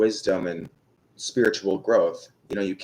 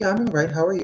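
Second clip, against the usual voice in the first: put-on girly, feminine voice, pitched up; 10 semitones higher than usual. Retelling a greeting exchange with Tamara, repeating own reply in a feminine-sounding voice. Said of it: "I just sounded so like feminine".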